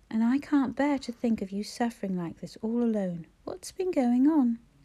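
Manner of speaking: ordinary delivery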